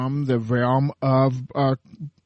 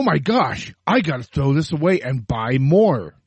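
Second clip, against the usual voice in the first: ordinary delivery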